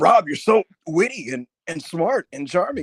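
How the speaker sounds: high, loud condescending tone. Retelling a Shawn impression from an interview: Shawn impression. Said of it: "R V D did the Shawn impression".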